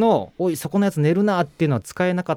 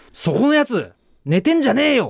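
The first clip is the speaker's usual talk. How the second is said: called out with the pitch raised; 6 semitones higher than usual. Retelling being told to say this facing away from a sleeping woman, as loud as possible. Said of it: "できるだけ大声で".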